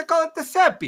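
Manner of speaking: Italian accent, put-on, squeaked very high. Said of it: "I know I'm doing an Italian accent".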